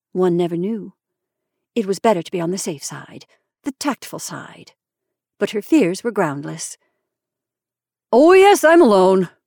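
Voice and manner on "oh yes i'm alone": hearty cry, raised and drawn out. A man answers a woman's gentle question: hearty. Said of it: "more heartily than he had spoken yet".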